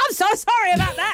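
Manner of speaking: high-pitched, loud yell. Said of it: "so I sort of yelled at her".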